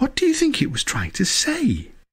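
tiny, small, high-pitched little voice. Narrator reads a story, Arthur asking the man a question: small voice. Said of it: "in a small voice".

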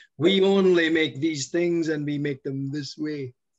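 put-on loud, slow Austrian-accented voice. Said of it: "it's my Arnie accent".

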